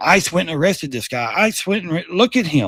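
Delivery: ordinary delivery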